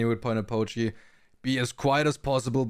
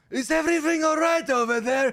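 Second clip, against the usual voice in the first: piercing, shrill, very high-pitched scream; 4 dB louder than usual. Narrating a game scene where everyone starts yelling, Baptiste screaming. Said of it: "you hear Baptiste screaming like".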